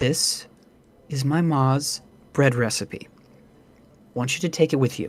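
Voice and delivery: close, hushed, leaning-in secretive whisper. Voicing an innkeeper character leaning in close to share a secret: whispering. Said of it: "in a whisper she says".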